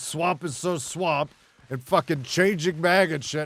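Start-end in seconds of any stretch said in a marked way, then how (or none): 0.0-1.3 loud, raised, screaming yell. Retelling what others kept screaming in the stream: imitating people screaming. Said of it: "you guys were screaming".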